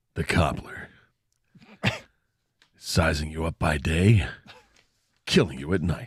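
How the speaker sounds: TV sports network promo voiceover voice. Riffing that Winnie the Pooh was a serial killer, in an ESPN voiceover voice. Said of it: "Sorry for like doing the E S P N voiceover voice".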